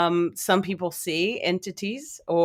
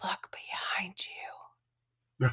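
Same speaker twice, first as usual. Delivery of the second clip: eerie, scary, very hushed, barely-there whisper; 11 dB quieter than usual. Retelling what a gentleman said to them, retelling a scary whisper. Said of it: "in the whisperest, most scary voice".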